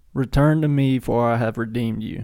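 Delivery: ordinary delivery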